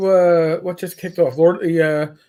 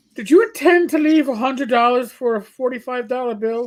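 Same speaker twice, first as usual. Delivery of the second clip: put-on real Irish accent, higher; 5 semitones higher than usual. Retelling a call from an unknown number about his bill, in an irish brogue. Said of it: "I hear an Irish brogue".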